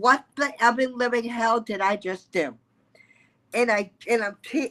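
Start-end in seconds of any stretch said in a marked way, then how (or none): 0.0-2.5 mock voice on the edge of tears. Coach retells calling her mentor after ending a session, imitating being almost in tears. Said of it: "I'm almost in tears".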